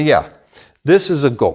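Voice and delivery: normal talking voice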